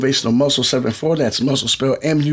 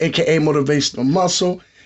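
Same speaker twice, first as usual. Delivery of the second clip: ordinary talk, nothing marked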